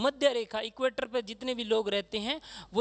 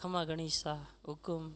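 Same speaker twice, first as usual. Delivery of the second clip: slow, relaxed, unhurried, easygoing delivery; 6 semitones lower, 8 dB quieter than usual. Showing how people in a Marwari-speaking area greet, slow and leisurely. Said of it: "धीरे धीरे ... ऐसे बोलते आराम से".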